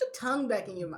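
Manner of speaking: ordinary delivery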